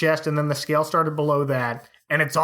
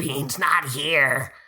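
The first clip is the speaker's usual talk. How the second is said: put-on dragon voice. Retelling a cartoon scene where a child hides under the bed: imitating a pretend dragon voice. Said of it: "in his pretend dragon voice".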